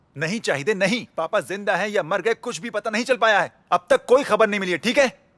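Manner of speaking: angry shouting. Asked a question on the phone, a character answers: shouting angrily. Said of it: "तुम मुझ पर चिल्ला क्यों रहे हो".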